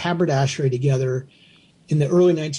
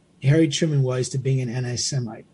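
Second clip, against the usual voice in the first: ordinary talk, nothing marked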